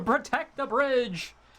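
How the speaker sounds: screaming. Voicing a character who calls to protect the bridge: screaming. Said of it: "he screams out".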